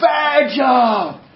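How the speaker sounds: acted-out, loud, shouting yelled outburst. Retelling how a customer reacted to bad news: imitating a customer yelling. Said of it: "he's yelling and he's stomping around".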